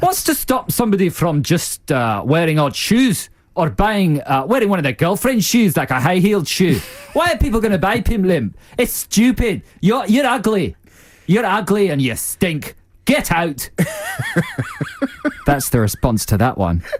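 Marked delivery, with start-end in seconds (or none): 0.0-13.7 raised-pitch, bad put-on Scottish accent. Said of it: "I just like that Scottish accent".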